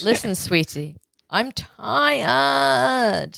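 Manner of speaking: put-on Valley Girl way of talking. Running through a string of dad voices, now doing the Valley Girl dad voice. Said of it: "That's the Valley Girl dad".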